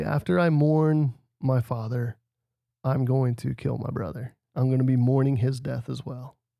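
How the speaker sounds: ordinary delivery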